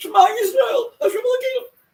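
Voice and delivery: very high, loud, frantic panicked scream, acted out. Retelling a panicking passenger on a plane, imitating someone screaming. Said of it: "This guy is screaming".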